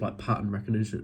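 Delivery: normal talking voice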